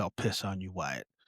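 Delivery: half-whisper. Recounting a scene, quoting one character's aside, retelling a half-whisper. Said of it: "And Doc kind of whispers".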